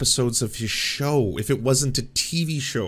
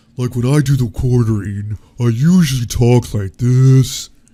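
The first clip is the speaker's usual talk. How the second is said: deep, very loud, slow voice; 10 dB louder than usual. Returning an impression to the video's speaker: deep The Quartering impression. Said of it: "a less deep impression that I do of him".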